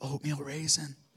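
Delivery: put-on under-breath whisper. Recalling his wife in the front row during a service; imitating an under-breath whisper. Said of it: "under her breath whispering".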